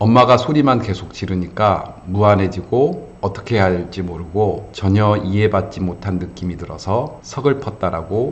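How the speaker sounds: plain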